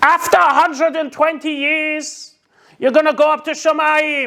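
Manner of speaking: shrill, high-pitched voice. Retelling what the new teacher said to the class: imitating a shrill voice. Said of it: "this shrill in his voice".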